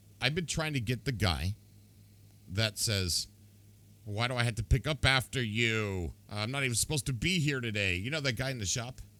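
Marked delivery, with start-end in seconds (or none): 4.1-8.0 put-on grumble, much higher. Talking about a game's voice actors, imitating a disgruntled shop NPC. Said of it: "disgruntled about being there".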